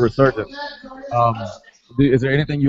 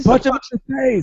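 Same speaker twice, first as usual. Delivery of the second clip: mock scream, much higher pitch; 12 semitones higher than usual. Describing local MMA fights, imitating someone in the crowd: retelling a crowd scream. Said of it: "you'll hear somebody scream".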